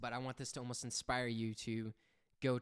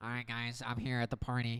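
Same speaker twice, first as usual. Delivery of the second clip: mocking, put-on nasal voice, louder; 4 dB louder than usual. Retelling friends' running joke, imitating a nasally voice. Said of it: "he has a very nasally voice".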